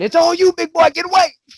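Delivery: very high, loud mocking shout.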